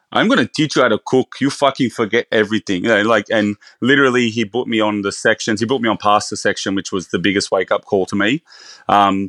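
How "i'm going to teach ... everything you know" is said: put-on big, burly Italian head chef accent. Quoting the man who took him under his wing at the start, big burly Italian accent. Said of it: "in his big um, burly Italian accent".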